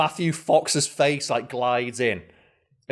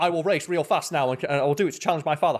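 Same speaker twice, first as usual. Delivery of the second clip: plain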